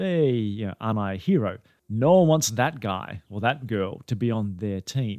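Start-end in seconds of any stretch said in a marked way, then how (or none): none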